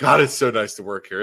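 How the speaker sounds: normal talking voice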